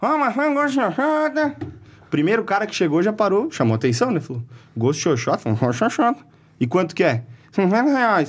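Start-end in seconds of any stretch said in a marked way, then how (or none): 0.0-1.6 mock shout, much higher pitch, slower. Retelling how a man began selling his apples, imitating a vendor shouting. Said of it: "Começou a gritar".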